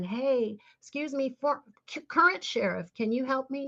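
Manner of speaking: high-pitched, acted-out, pleading call. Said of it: "I'm screaming".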